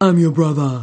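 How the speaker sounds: mocking tone. A sister echoes her brother's words back at him, in a mocking deep voice. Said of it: "she echoed him mockingly, using a deep voice".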